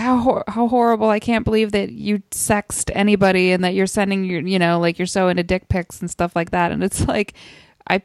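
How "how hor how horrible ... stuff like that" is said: ordinary delivery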